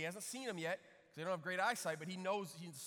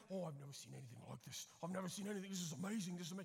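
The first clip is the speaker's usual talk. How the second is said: put-on South African accent, soft and amazed; 5 dB quieter than usual. Retelling a south african guy's reaction to watching lions, put-on south african accent. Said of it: "Is that a good South African accent?".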